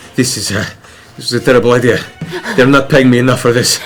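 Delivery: out of breath and panting. Voicing Jaret as he retreats behind the wall, panting.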